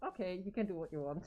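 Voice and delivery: ordinary talk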